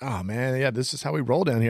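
put-on relaxed, laid-back dude voice. Retelling a bar owner's words from a visit: imitating a laid-back guy. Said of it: "he was just laid back".

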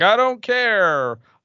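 defiant villain voice. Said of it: "He's like".

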